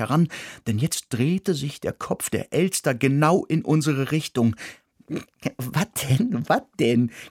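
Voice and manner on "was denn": giggly delivery. The mouse answers the narrator, giggling. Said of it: "kicherte die Maus".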